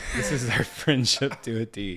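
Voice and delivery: loud speech through laughter. Speaker talking with a friend about their friendship, laughing while talking. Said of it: "sorry, I'm laughing".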